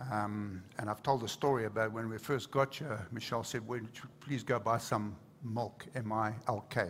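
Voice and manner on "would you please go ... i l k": plain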